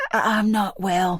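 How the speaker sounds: whispering hoarsely. Reading a scene where the narrator fakes illness: hoarse whisper. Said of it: "I whisper in a hoarse voice".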